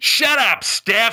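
irritated, angry, dismissive tone. Doing an impression of boomers reacting to philosophy talk: imitating boomers yelling shut up. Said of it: "here's my impression of trying to speak philosophy to boomers".

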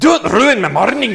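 over-the-top Scottish brogue, very high-pitched. Quoting what a woman said to a friend, in an overdone Scottish accent. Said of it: "Too Scottish".

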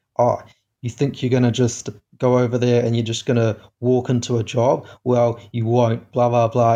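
ordinary talk

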